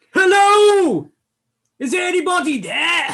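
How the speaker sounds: very loud, very high, booming, drawn-out bellow. Voicing a character calling out to a ship: bellowing. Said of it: "bellows [name]".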